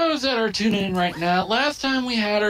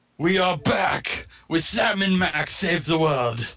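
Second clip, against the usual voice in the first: put-on Russian accent; 3 semitones lower than usual. Opening a new video episode for viewers, fake Russian accent. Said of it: "trying to put on the fake accent".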